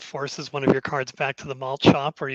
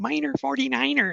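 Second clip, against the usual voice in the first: whiny, very high, creaky, rough voice; 11 semitones higher than usual. Recalling a show's catchphrase said many times: whiny Velma voice. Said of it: "all I could hear was Velma's voice".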